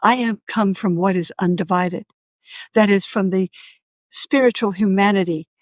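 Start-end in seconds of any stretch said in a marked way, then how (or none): none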